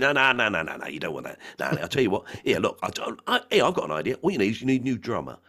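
pushy, blustering, loud, bumptious know-it-all voice. Retelling a script scene: imitating Harvey Goldstein, bumptious and loud. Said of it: "I basically did an impression of him".

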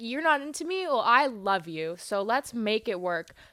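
normal talking voice

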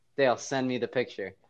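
ordinary delivery

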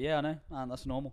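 mock deadpan delivery. Retelling a woman's reply after the race, imitating her deadpan.

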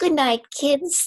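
very high, piping, accurately pitched character voice. Retelling the end of the recording, as Princess Margaret: Princess Margaret impression. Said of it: "spot on impression".

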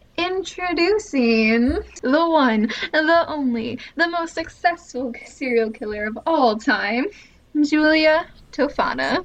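grand, put-on stage announcer voice. Introducing the serial killer being discussed: announcer voice. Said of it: "I need like an announcer voice".

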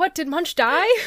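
acted, high, loud, way too excited and eager. Retelling a brother's question on a family call: imitating someone sounding way too excited. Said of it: "he just sounded way too excited".

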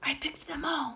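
barely audible, very soft, hushed whisper. Narrator reads himself telling the pelican while the Duke shouts for his gun, whispered. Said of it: "I whispered to the pelican".

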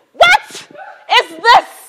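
high, loud stunned cry.

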